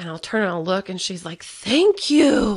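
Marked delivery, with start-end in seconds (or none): 1.4-2.6 raised, high-pitched, fed-up, exasperated tone. Retelling how the oldest reacts after finally being heard: imitating someone exasperated. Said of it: "my oldest gets very exasperated with me".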